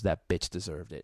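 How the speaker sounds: very low, dead-serious deadpan. Retelling what Mike said outside afterwards, imitating Mike, dead serious. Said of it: "he dead serious goes".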